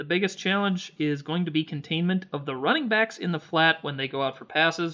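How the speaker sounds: plain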